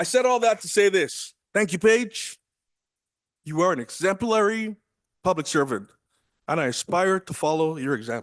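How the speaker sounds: teary, emotional, on the verge of tears. A speaker thanks paige, a public servant, after telling her story, teary. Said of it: "I'm getting teary".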